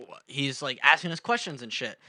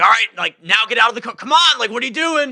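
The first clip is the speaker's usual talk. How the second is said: screaming, very high and very loud; 9 semitones higher, 13 dB louder than usual. Retelling being ordered out of a car by cops, imitating cops screaming. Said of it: "They were, like, screaming at us".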